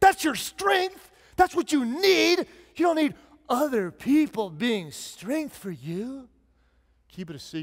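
mock sarcastic tone. Preaching advice he does not believe, saying the opposite: put-on sarcasm. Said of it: "being sarcastic and saying the opposite".

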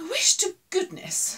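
grumbling, complaining tone. A character speaks to Fuzzy, who keeps dancing to the radio, complaining. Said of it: "she complained".

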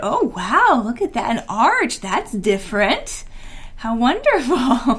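patronizing, condescending teacher voice. Quoting a teacher praising a novel arch, put-on condescending teacher voice. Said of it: "That was my teacher voice".

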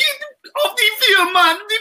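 put-on high, loud yell in a Jamaican accent. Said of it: "his Jamaican blood come out".

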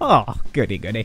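low, fake upper-class posh English accent. Speaker tries out a posh voice for fun, posh accent. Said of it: "How posh do I sound right now?".

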